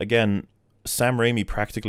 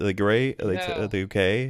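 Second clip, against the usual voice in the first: ordinary delivery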